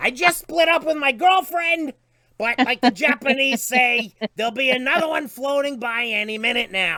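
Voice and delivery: high-pitched comic half-yell. Reading out a listener's requested text, in a Gilbert Gottfried voice. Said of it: "in a Gilbert Gottfried voice".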